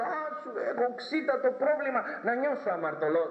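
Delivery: high, mocking, self-righteous put-on voice.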